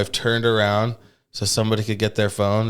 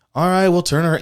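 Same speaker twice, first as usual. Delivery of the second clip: high-pitched, forced cheery, fake-friendly tone hiding annoyance; 8 semitones higher, 3 dB louder than usual. Retelling a reply to a passenger who lost a phone, imitating own forced smiley tone. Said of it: "with a smiley on my, like, trying not to seem annoyed".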